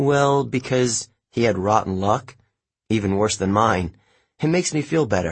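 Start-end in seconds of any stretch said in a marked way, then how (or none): none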